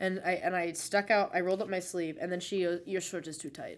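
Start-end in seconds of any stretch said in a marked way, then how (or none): 2.9-3.8 attempted, imperfect Russian accent, quieter. Retelling what the woman said after he rolled up his sleeve, in an attempted Russian accent. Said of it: "I can't really do a Russian accent".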